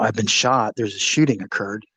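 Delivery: plain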